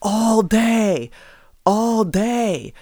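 high, loud taunting yell. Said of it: "a coach or a parent starts yelling".

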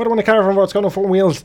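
put-on heavy, laid-on Irish accent. Discussing the film Snatch with another speaker, quoting Brad Pitt's traveller accent. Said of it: "did a better accent when he was playing a pikey".

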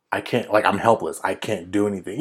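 plain

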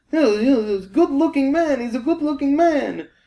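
put-on very high voice with heavy European accent. Retelling an old man's talk about a TV show: imitating a thick European accent. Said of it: "This guy is super European".

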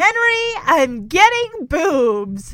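mock cheerful, candid, pleased, drawn-out tone. Acting out a character's line to henry from a scene, imitating saying it smiling. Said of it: "She says this with a smile".

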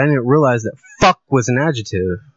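ordinary talk, nothing marked

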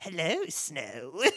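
put-on storybook villainess, wicked witch voice. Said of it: "the guy did a really good voice for her".

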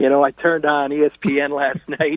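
speaking while barely holding back laughter. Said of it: "You're trying not to laugh".

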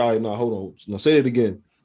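usual speaking voice

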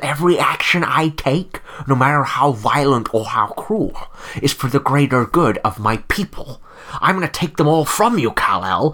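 grand, declaiming movie-supervillain voice. Quoting a movie villain's threat to Kal-El: Zod impression. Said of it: "one of [name]'s top three go-to impressions".

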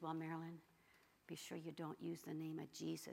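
mock whispering. Retelling a girlfriend's warning about the name of Jesus: imitating a girlfriend whispering. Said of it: "And my girlfriend whispered".

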